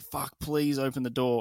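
mock frantic pleading. Retelling a movie chase, the character banging on a door: imitating a frantic plea. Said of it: "he's frantically running to the door and he's banging on the door".

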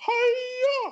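very high, drawn-out puppet voice. Asked by others to do impressions, the speaker does Miss Piggy voice. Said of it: "do Miss Piggy. And I'll be like".

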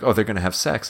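ordinary talk

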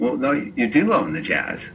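mock sheepish, a bit taken aback, swooping pitch. Recounting a conversation, the speaker acts out his own sheepish reply. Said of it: "kind of sheepishly said".

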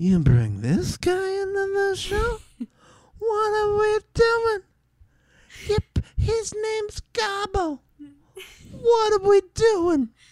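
very high, swooping, drawn-out comic voice. Imitating a comedian reacting to a show guest: Sebastian Maniscalco voice. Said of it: "I did that voice very well for those of you who know who Sebastian is".

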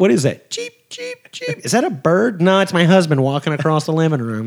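put-on, made-up voice with swooping sing-song. Imitating a wife joking about a cheap husband: imitating his wife. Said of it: "I don't know why I made her sound like that".

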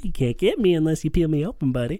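high, sexy, teasing put-on character voice. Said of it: "especially that voice".

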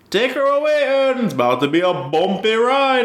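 very high, clumsy, bad Jamaican accent. Quoting a line from the Night Bus scenes: bad Jamaican accent. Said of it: "really bad, uh, Jamaican impression".

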